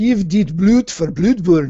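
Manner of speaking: put-on Norwegian accent. Reading a danish poster aloud to another speaker, in a norwegian accent. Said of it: "I used a Norwegian accent there".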